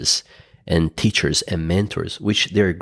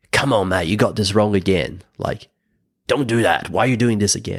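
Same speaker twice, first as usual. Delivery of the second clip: put-on harsh, stern, wrathful scolding father voice. Retelling how the speaker used to scold themselves: imitating harsh self-talk. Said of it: "talk to myself was in a very harsh way".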